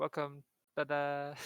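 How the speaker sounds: usual speaking voice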